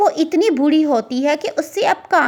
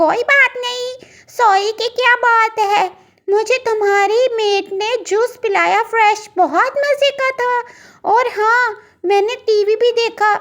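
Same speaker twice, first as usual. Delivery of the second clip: cheerful, happy little cartoon bird voice; 7 semitones higher than usual. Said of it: "इतने में [name] चिड़िया की दोस्त [name] चिड़िया आ जाती है।".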